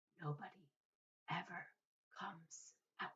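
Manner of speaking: very quiet, soft, hushed, secretive whisper. Reading a story aloud, a grandfather confides a secret: soft secret whisper. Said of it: "lowered his voice to a soft, secret whisper".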